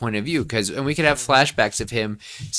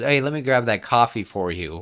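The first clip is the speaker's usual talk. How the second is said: put-on rude voice. Retelling how an annoyed coworker grabs coffee: imitating someone speaking rudely. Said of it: "he says it kinda rudely".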